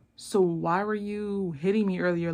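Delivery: ordinary delivery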